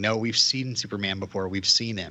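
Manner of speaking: plain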